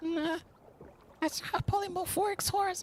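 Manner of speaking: very high, hushed half-whisper. In a role-play game, a character answers a companion back, half-whispered reply. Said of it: "She whispers back".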